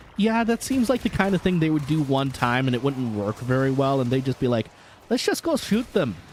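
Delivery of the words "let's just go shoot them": very high, bad, fake Brazilian accent. Retelling what they would decide to do, in a bad brazilian accent. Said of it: "so that was a very bad accent".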